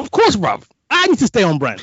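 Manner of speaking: shrill, swooping, full-volume, high-pitched yell. Answering a friend's remark before performing a piece: shouting. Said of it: "Stop shouting".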